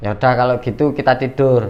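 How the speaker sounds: plain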